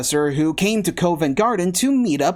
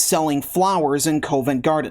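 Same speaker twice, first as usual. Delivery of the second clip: normal talking voice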